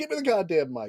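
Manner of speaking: barked yell, pitch going up. Recounting a wrestling match, acting out a wrestler yelling for a mic: retelling a yell. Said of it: "he's like yelling for a mic".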